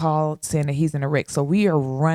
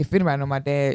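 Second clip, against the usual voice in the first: ordinary delivery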